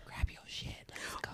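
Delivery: very quiet, hushed, secretive whispered aside. Acting out telling a friend to leave after winning the lottery: pretend whispering. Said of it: "whispering to her".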